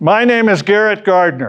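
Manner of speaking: grounded, powered-up voice. Speaker demonstrating how to power up and throw the voice, projecting. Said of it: "You must power up, or you can't throw your voice".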